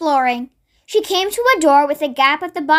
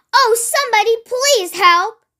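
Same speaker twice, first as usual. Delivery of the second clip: little squeaky shriek, small and high; 7 semitones higher than usual. Cornered by Ginger the farm cat, Miss Tiny cries out, shrieking for help. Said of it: "Shrieked Miss Tiny at the top of her voice".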